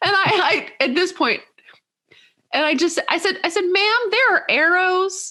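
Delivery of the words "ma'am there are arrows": full put-on Southern accent, higher and slower. Speaker retelling telling off a woman ignoring aisle arrows, put-on full Southern accent. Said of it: "I can hear it in your voice".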